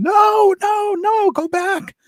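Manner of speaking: mock scream, very high, slow and drawn out. Retelling a mother screaming outside in the yard: imitating someone screaming. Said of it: "Debbie's mother screaming".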